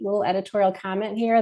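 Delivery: ordinary delivery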